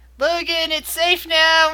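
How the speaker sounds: high yell that carries. Voicing a character calling to Logan that it's safe: yelling. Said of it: "You hear Shiori yelling".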